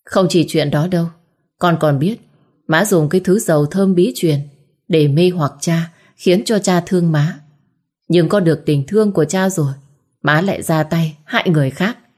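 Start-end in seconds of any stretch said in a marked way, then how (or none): none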